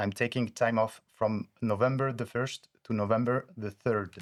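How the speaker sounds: plainly spoken English with a French accent. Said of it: "je m'excuse par avance de mon accent anglais".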